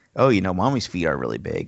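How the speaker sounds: ordinary talk, nothing marked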